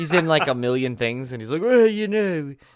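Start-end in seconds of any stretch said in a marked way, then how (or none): 1.6-2.5 very high, snobby, snooty voice. Describing a planned character who is a snobby film historian: snobby film historian voice. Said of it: "him, like, being a film historian".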